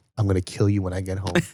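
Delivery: smiling, pleasant, friendly tone with menacing edge. Retelling a father's words whispered in the ear: imitating a smiling threat. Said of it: "but he's smiling".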